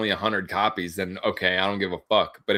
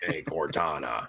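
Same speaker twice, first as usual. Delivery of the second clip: put-on gravelly soldier voice, lower and quieter; 5 semitones lower, 7 dB quieter than usual. Mocking how a game hero sounds: Master Chief voice. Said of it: "Did he talk like".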